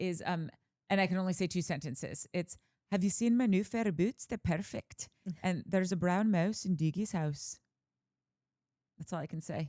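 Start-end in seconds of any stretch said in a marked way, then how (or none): 2.9-7.6 Glaswegian Scottish accent. Asked for a scottish accent, doing the only two lines known: glaswegian scottish accent. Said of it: "Scottish accent I can do, it's it's Glaswegian".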